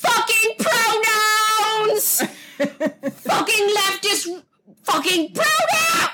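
put-on ranting shout, high, very slow, pronouns stretched. Retelling a British man's rant, retelling a man's shouting. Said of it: "I'm gonna shout right now".

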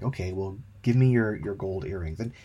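ordinary talk

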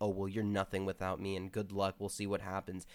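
ordinary talk

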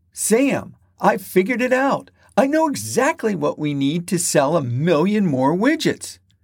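eager, animated, excited, high and swooping. Reading a sales manager's line to Sam: excited voice. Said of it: "In an excited voice".

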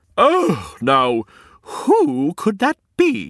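startled, surprised tone. A narrator reads the queen's reaction to someone at the front door, surprised. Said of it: "Asked the queen in surprise".

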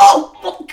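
high, loud, thrilled gushing excitement. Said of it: "Neve just gets so excited".

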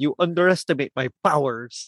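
put-on crazy vampire accent. Retelling what Dracula says in the film: crazy Dracula accent. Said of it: "that crazy accent by Judd Hirsch".

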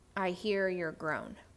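hushed whispering. Retelling hearing god speak while sitting in the car: imitating a whisper. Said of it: "he whispers".

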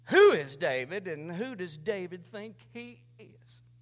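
loud, scornful, sneering tone. Retelling how a man sneered at someone and asked about David: mock-sneering question. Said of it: "he sneered at him and he asked".

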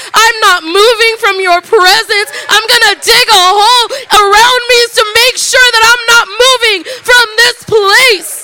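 high, loud, tearful pleading.

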